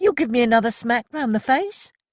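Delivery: piercing, shrill, high-pitched, defiant voice. Milly challenges someone in front of a crowd, in a shrill challenging voice. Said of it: "her shrill voice silencing the crowd".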